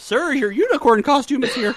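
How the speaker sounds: put-on very high, very loud nerdy teen voice. Voicing the costume delivery arriving, as the pimply nerd from The Simpsons. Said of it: "You totally sounded like the pimply nerd from Simpsons".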